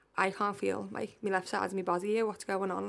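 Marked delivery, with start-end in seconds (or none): none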